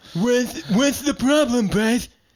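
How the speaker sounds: voice of a deaf talker. Teasing the other speaker, putting on an imitation of a deaf person's speech. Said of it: "is this not how you hear deaf people speak?".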